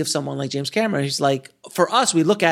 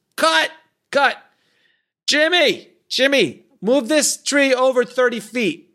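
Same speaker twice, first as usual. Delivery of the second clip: high-pitched, raised, yelled-out voice; 9 semitones higher than usual. Retelling how someone ran into a virtual tree: imitating someone yelling. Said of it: "he runs into a virtual tree and he yells".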